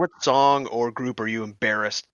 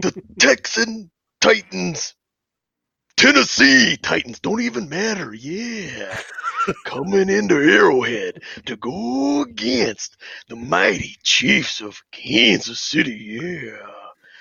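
put-on gravelly wrestler voice, pitched higher; 7 semitones higher than usual. Giving a football prediction on request: Macho Man Randy Savage voice. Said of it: "I want your A F C prediction and macho voice".

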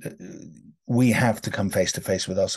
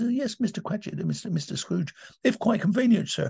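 put-on meek clerk voice, higher pitch; 12 semitones higher than usual. Showing how the one-man show switches into each character: Cratchit voice. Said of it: "then you've got Cratchit, who says".

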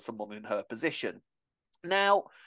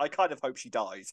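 ordinary talk, nothing marked

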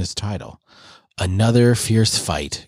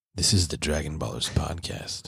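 low, soft, sultry podcast-host voice; 6 semitones lower, 9 dB quieter than usual. Opening the Dragon Ballers podcast, the host introduces the show in a sultry voice. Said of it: "JD has turned on the sultry voice".

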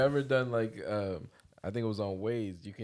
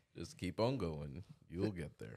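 put-on calm narrator voice; 4 semitones lower, 8 dB quieter than usual. Imitating a GPS voice giving directions on a cross-country trip: Morgan Freeman GPS voice. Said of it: "He's telling me where to go".

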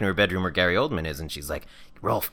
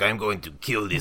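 put-on French accent. Retelling a scene where a man pulls out a gun, in a put-on french accent. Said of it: "Why are you still talking in the French accent?".

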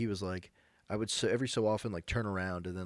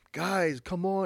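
put-on shrill, very high, loud calling-out yell; 10 semitones higher, 5 dB louder than usual. Retelling a story where the leader calls the group on: imitating someone yelling. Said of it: "he's, like, yelling".

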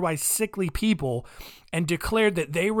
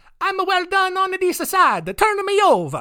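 fun put-on Italian accent, loud, pitched way up; 14 semitones higher, 7 dB louder than usual. Quoting Lawrence's shout from the hot grill, in a put-on Italian accent. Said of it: "I like the idea of him saying it like that, all fun and Italian".

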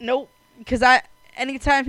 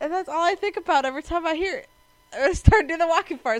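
ordinary delivery

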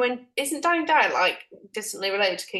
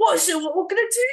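put-on shouting voice at a higher pitch; 9 semitones higher, 4 dB louder than usual. Retelling an advert for a show called The Wall: imitating Danny Dyer shouting.

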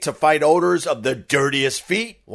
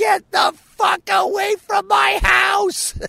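put-on very high, drawn-out, rough terrified scream. Recounting a man scared of COVID yelling at a kid on Halloween, retelling a scream. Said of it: "he's just screaming".

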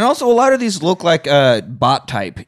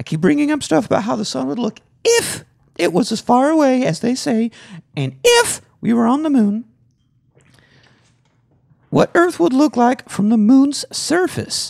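put-on high-pitched girly voice; 8 semitones higher than usual. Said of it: "do you wanna do a girl voice?".

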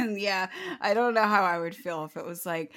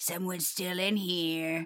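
put-on creepy voice, lower pitch, quieter; 2 semitones lower, 4 dB quieter than usual. Voicing what the maids' room code meant, in a put-on creepy voice. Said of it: "That was a really creepy voice".

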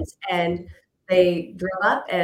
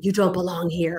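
imitated growly voice. Retelling what visitors heard in the room: imitating a growly voice. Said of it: "a growly voice saying".

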